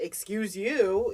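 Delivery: high, mock, smart-mouthed sarcastic tone. Retelling own reaction when bumped into: imitating own smart-ass retort. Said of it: "I'm a smart ass".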